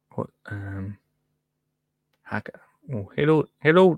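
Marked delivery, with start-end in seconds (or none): 3.1-3.9 bad put-on Scottish accent slipping into Irish. Trying to get into a scottish accent: attempted scottish accent, came out irish. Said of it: "No, that's Irish".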